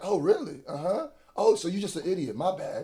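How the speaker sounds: put-on patronising, talking-down, condescending tone. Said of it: "He's the king of condescending".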